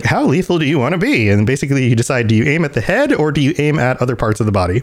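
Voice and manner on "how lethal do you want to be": glitchy, high-pitched robot voice. Describing a game's talking gun, doing Skippy's glitchy voice. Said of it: "he's got the little glitchy voice and he's like".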